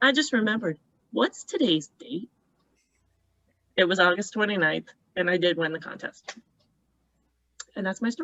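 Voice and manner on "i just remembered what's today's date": the smuggest, most self-satisfied tone imaginable. Speaker retells their mother calling without a greeting, imitating mother's smug voice. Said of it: "in the most smug voice you would ever want to hear".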